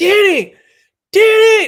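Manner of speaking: very high, very loud, shrill scream. Speaker retells screaming their sister danny's name during an emergency, retelling their own scream. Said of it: "So I'm like screaming at my sister".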